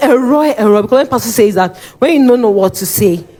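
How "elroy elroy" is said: shouted call, said twice. Recounting shouting a name for help while being beaten, retelling a shout. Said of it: "I was shouting".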